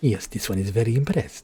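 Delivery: silly, goofy put-on creature voice. Doing a silly voice for a character type he likes: silly Khajiit voice. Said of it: "my silly Khajiit voice".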